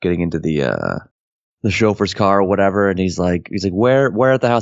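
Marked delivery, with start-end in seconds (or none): 3.7-4.6 acted, boozy, befuddled, slurred drunken voice. Retelling a drunk character's line from the film: imitating a drunk character. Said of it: "he's all drunk".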